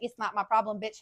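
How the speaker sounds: mock mutter under breath. Retelling a clash, the speaker is imitating a woman's mumble under her breath. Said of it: "she wants to mumble under her breath".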